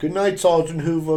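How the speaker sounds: high-pitched, sarcastic delivery.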